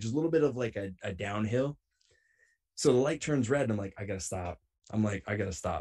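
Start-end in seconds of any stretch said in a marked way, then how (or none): none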